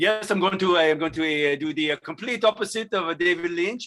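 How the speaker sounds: put-on French accent, high pitch. Acting out a director pitching Dune to Warner Brothers: Denis Villeneuve French accent. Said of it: "[name] rehearsed that French accent".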